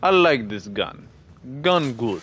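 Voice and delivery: clumsy fake Russian accent. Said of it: "Sorry for that bad Russian accent".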